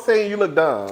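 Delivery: plain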